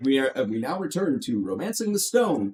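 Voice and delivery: ordinary talk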